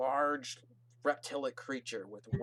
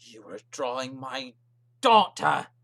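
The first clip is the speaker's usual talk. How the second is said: enraged, very loud, rising furious yell; 11 dB louder than usual. Voicing an angry father accusing a man of drawing his daughter: furious father shouting. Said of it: "and it's just furious".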